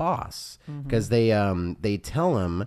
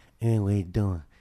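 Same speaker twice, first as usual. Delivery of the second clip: put-on old-Hollywood leading-man voice. Describing an actress's performance in a movie, imitating a Marlon Brando voice. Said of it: "a Marlon Brando kind of".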